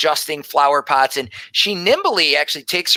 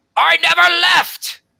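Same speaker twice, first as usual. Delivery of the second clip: grumbling, much higher and louder; 4 dB louder than usual. A man at the table below answers an old woman calling him, grumbling. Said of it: "he grumbles from below".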